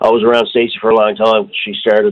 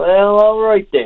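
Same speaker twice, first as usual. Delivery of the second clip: very high Newfoundland Southern Shore twang; 11 semitones higher than usual. Recalling signing up a woman as a regular player, quoting her reply in Southern Shore twang. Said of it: "in her Southern Shore twang".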